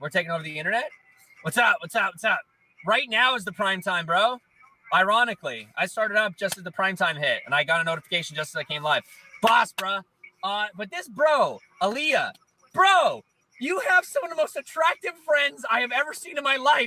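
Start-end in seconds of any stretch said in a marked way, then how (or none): 10.8-16.9 full-on, high, pitched-up yelling. Telling another speaker about the attractive friends, yelling. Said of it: "Why are you yelling about it?".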